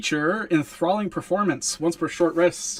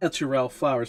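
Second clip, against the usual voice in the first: ordinary delivery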